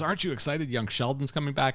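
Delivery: high-pitched, heavily sarcastic, dripping tone. Retelling what Rachel said during a football ad: imitating Rachel, very sarcastic. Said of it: "Very sarcastically".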